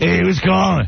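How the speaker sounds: put-on, faked casual answering-the-phone voice. Mocking a dj who fakes a staged phone call on air. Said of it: "tries to make it sound like".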